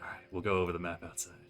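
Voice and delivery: half-whispery, voiced stage whisper. Narrating a game, the speaker voices a character while others sleep: half-whispering. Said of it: "he kind of whispers".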